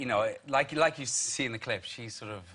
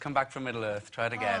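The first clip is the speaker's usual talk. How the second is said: ordinary delivery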